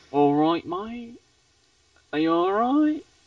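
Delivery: put-on casual London accent. Showing how accents change from london to birmingham: london accent. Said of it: "pick up a different accent".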